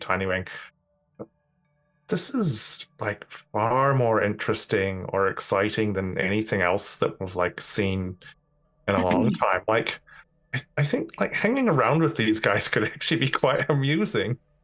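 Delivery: confiding aside. Leaning close to speak to tiny wing, in a very quiet voice. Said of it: "in a very, very quiet voice say".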